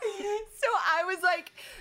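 high-pitched, laughing lead-in through the words.

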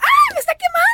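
put-on shrill little-girl shriek, very high. Retelling how she yelled as a small girl when the oil jumped, acting out a yell. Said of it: "y yo gritaba".

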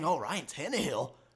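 low, soft, dismissive scoff under the breath. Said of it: "scoffing and saying".

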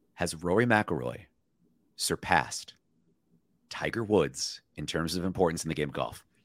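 conspiratorial, mock-secretive, confiding aside. Asking the other speaker a daring question, saying it very quietly for a joke. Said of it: "I'm gonna say this very quietly".

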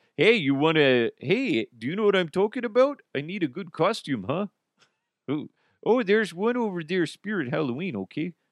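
bad fake Canadian accent. Speaker discussing Spirit Halloween stores in Canada, shitty Canadian accent. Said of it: "I do a shitty Canadian accent".

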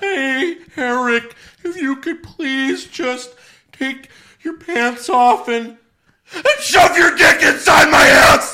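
very high, very loud, drawn-out holler. Answering a marry-or-kill question in Mankind voice. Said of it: "You're gonna do Mankind voice".

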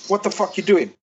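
ordinary talk

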